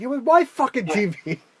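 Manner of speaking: shrill, very high, drawn-out screaming. Retelling a favorite movie scene: imitating someone screaming. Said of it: "he's just screaming out".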